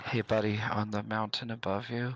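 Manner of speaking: hushed whisper. Using the message cantrip, a character points and whispers to Slate on the mountain, whispering. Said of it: "I whisper at Slate and say".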